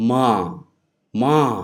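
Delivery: ma with pitch falling from high. Explaining tones, demonstrating tone four; high falling tone. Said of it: "So high falling would be something like".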